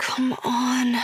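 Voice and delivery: pleading under breath. Reading a story aloud, the narrator stuck at a zipper: pleading under breath. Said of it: "I say under my breath, a plea".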